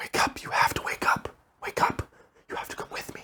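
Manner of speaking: soft, hushed, breathy whisper. Retelling being woken at night by a voice: imitating a whispering voice. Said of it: "I hear a voice".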